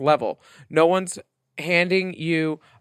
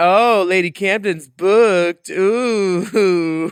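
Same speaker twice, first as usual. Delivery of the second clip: put-on very slow, loud, drawn-out mad delivery; 4 semitones higher, 6 dB louder than usual. Retelling what a Drag Race Italy contestant said online: imitating Farida being mad. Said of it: "She was all mad online".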